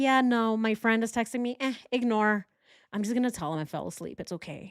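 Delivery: offhand, careless, breezy and dismissive tone. Imitating this guy brushing off a friend's text: imitating this guy dismissive. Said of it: "He's like".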